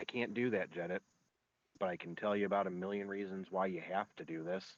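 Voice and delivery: very soft, quick, under-the-breath delivery. Recounting his second answering a plea in front of the other knights, retelling a very quiet reply. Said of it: "very, very quietly said".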